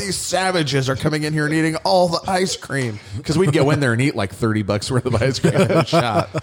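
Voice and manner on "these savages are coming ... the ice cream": mock irate elderly griping, high-pitched and angry. Retelling what annoyed old people said: imitating angry old people. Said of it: "the old people were getting pissed".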